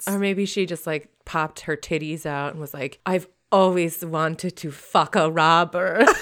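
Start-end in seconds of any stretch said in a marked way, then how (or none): 3.1-6.1 put-on Slovak-accented speech. Acting out what a woman might say to a robber, put-on Slovak accent. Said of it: "trying to channel my Slovakian accent or Czech accent".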